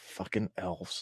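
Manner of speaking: muttered under breath. Speaking in character after a draining trap: mumbled under breath. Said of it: "I just mumble under my breath".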